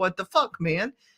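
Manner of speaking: acted-out, defensive tone. Acting out how a reply would come out on a call: own defensiveness. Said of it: "a little bit of defensiveness that comes up".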